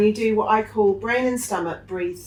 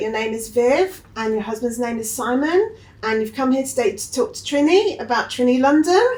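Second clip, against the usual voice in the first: uptalk, pitch rising at the end of each phrase; 4 semitones higher than usual. Explaining uptalk by giving an example, using uptalk. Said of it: "Uptalk is when".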